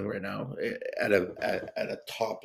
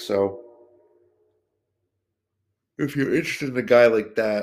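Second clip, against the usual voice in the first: very loud words stretched by a yawn; 3 semitones higher, 8 dB louder than usual. A speaker talking late to viewers about a player's cards, yawning while talking. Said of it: "sorry, I'm yawning".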